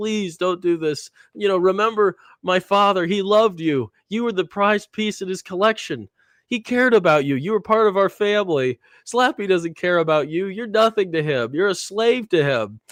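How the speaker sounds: mock earnest, high, begging pleading voice. Retelling a scene where Trina pleads with Rocky: imitating Trina pleading. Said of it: "Trina is pleading to him".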